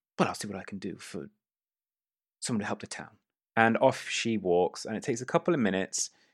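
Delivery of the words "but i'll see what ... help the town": quick, soft, huffy, snooty condescension. Narrating a scene, voicing a snooty woman who huffs before replying: huffy, snooty voice. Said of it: "she kind of like huffs and is like".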